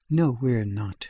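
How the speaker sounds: dropped, low-register voice. Narrator reading Judith's reply to Mrs. Sloane: low voice. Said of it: "she said in a low voice".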